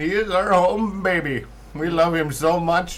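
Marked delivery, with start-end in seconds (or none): 0.0-1.4 put-on Indian accent, high-pitched and slow. Talking about their friend Kyle, the speaker calls him home baby in a put-on Indian accent. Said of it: "why I had to say it in an Indian accent".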